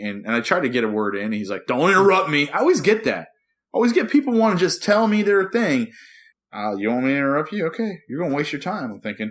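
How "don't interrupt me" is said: sharp, loud yelling. Retelling a man who yelled at the speaker, imitating someone yelling. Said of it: "he's like yelling at me and everything".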